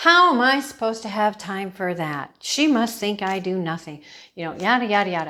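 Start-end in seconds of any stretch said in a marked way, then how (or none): none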